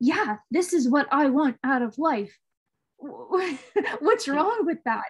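quick, defensive, shot-back retort. Retelling an argument, answering someone's accusations: retelling shooting back. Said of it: "shooting back at her like".

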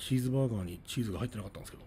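nearly flat, level, monotone delivery with almost no intonation. Demonstrating a sentence for comparison: almost no intonation. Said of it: "ほとんどまあ抑揚とかあんまりつけてないと思うんですけど".

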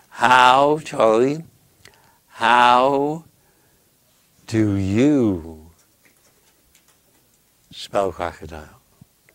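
very slow falling sinking tune. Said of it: "I'll ask you the question very slowly".

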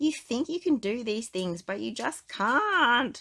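high, loud yelling with "can't" drawn out. Reading a story aloud, voicing a father addressing his son: shouting. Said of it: "Marlin shouted".

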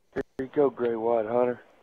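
ordinary delivery

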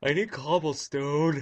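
loud, yawning mid-sentence. Narrating their own game play, saying this through a yawn. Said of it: "Sorry, I'm yawning".

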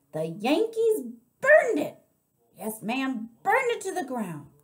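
sudden, very loud, high-pitched shout. Answering the narrator's question, shouting so loud that everyone jumps. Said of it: "Miss Franny shouted so loud that Winn Dixie and Amanda Wilkinson and me and we all jumped".

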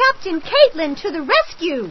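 ringing, high, loud exclamation. A girl playing captain confronts a boy throwing rocks at a cat, crying out. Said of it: "she cried".

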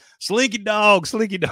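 excited shouting. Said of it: "she's yelling".

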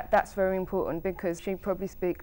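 ordinary talk

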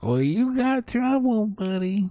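rough squeaky rat voice. Game master voices a rat-folk lookout confronting the party: squeaky rat-folk voice. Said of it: "So the little rat folk person steps out from the shadows, ... Okay, so what you hear then are very sort of rough but squeaky kind of voices that start, ... And in a little squeaky voice that I have not yet mastered".

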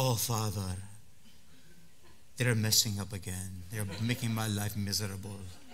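very low, soft, hushed British accent. Speaker acting out a prayer to the Father, as Jesus in a British accent. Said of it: "Or in a British accent".

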